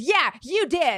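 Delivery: mock stubborn, heated, angry yelling insistence. Retelling an argument with a man who denied hitting someone, retelling an angry yell. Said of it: "I'm like hurting my voice yelling like this".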